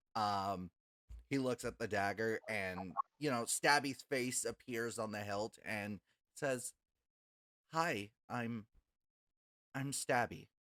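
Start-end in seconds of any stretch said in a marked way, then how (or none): 7.7-10.3 slow, frightened, faltering, terrified character voice. Voicing a talking dagger greeting someone: terrified sentient dagger voice. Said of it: "You can tell that she is fucking terrified".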